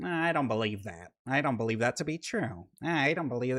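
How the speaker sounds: soft, little voice.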